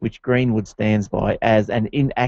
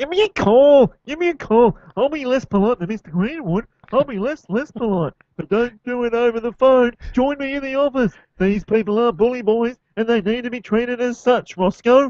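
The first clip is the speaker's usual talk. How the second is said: pinched, nasal put-on voice, very high; 12 semitones higher than usual. Trying out an impression after being told how to do it, a bit nasal put-on voice. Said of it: "you gotta go a bit nasal".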